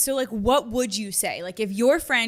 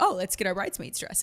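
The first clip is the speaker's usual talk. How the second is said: ordinary talk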